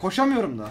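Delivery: high, loud, rushed, panicked voice.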